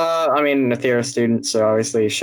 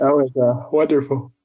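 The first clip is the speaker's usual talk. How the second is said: words stretched through a yawn; 2 semitones higher than usual. Reacting to a joke another speaker shared, yawning while talking. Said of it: "says it's wonderful while he yawns".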